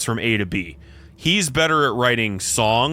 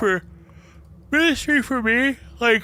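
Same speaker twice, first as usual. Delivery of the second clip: very high-pitched voice, words stretched through a yawn; 12 semitones higher than usual. Giving your take on the band Ministry, talking through a yawn. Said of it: "sorry, yawning".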